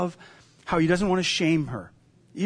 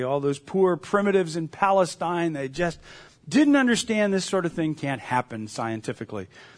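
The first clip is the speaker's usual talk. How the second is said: ordinary delivery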